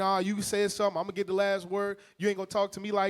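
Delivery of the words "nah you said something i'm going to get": plain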